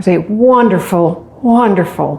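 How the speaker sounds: sarcastic tone. Introducing a well-known phrase about doing scary things: sarcastic tone. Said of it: "can you feel the sarcasm?".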